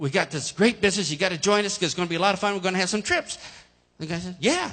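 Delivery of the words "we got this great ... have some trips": very fast, rapid-fire rattled-off run of words. A distributor retells what he said to a man he was walking beside, very fast. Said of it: "I said very quickly".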